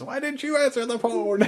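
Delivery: shrill, high, loud angry shout. Speaker recounts a lady one room over scolding her kids, retelling a yell. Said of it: "she's yelling at her kids".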